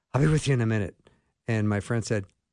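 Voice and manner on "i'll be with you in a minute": mock flustered, frazzled, harried voice. Retelling a restaurant visit, quoting the waitress, imitating a frazzled waitress. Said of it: "in a frazzled sort of way".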